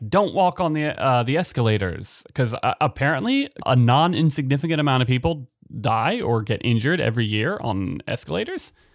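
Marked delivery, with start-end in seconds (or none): none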